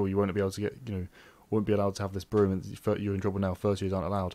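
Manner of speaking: usual speaking voice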